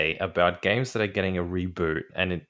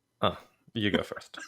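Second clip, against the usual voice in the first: let-down tone, quieter; 4 dB quieter than usual. Asked for thoughts on the news, handing over the turn, sounding disappointed. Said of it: "You sound so disappointed".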